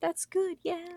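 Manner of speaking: tiny, hushed, quiet little voice. Teasing another player by imitating Simon: tiny quiet voice imitating Simon. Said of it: "tiny quiet voice go".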